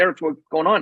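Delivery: ordinary talk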